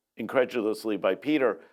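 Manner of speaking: normal talking voice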